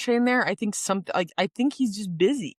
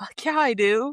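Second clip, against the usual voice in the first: put-on excited voice, higher; 3 semitones higher than usual. Retelling a character's reaction after winning an award: imitating excited Shane. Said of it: "he's so excited".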